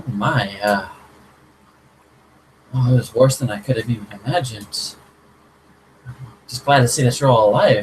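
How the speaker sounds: completely surprised, stunned exclamation. Voicing a character who sees the bloodied party: completely surprised. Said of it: "completely surprised".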